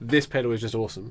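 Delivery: plain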